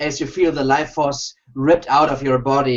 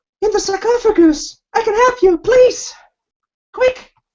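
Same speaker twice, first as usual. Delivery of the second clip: urgent, very high-pitched pleading female voice; 5 dB louder than usual. Voicing a female voice heard in the players' minds: pleading female voice. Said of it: "here's the female voice again".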